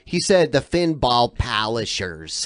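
put-on Michigan accent. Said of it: "did you hear the Michigan accent?".

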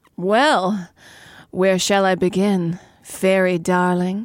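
lingering, high, slow drawl. Reading a story aloud, the narrator voices the man's line, drawling. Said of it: "slid it out and drawled".

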